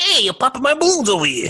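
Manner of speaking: very high, swooping, griping tough-guy voice. Doing a mobster scene bit about popped balloons: Joe Pesci impression. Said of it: "That was a good Pesci".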